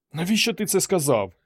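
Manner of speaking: rasping hoarse voice. Ruth asks Jason why he said that, hoarse rasp. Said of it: "прохрипіла вона".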